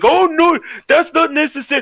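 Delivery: put-on elderly Indian accent, very high and slow. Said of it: "make him sound like an elderly Indian person".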